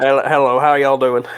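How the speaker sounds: put-on Southern accent. Retelling how Southern Galen talked in the session: Southern Galen voice. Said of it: "how'd you like Southern Galen?".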